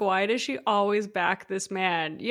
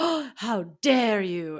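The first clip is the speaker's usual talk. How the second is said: very slow, drawn-out, offended, indignant tone. Retelling how Lala mimicked Ariana being asked about it: imitating Ariana's tone. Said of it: "And she said it in that tone".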